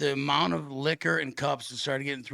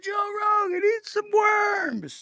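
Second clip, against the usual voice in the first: put-on very high, loud, drawn-out drunken yell; 6 dB louder than usual. Telling of heckling a commentator at a UFC event, the speaker reenacts: retelling a yell. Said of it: "and I'm yelling".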